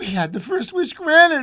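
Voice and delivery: feverish and pitched very high. The old woman answers her husband, who tells her to get back to bed: said feverishly. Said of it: "said the old woman feverishly".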